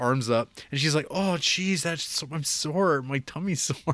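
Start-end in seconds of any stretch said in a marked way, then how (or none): 1.1-3.9 high, slow, drawn-out spoiled pampered princess voice. Retelling a film scene, imitating a pampered princess type. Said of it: "little princess kinda character".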